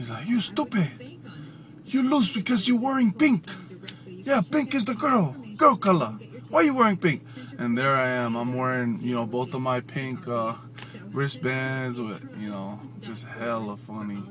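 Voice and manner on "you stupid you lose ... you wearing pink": put-on speaking with a Samoan accent. Retelling what a man said during the team's game, in a Samoan accent. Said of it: "he has that Samoan accent".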